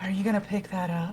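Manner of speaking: very soft, hushed, seductive dominatrix-style voice. Retelling a buddy's line from a game: imitating a seductive dominatrix voice. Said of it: "this very seductive dominatrix voice".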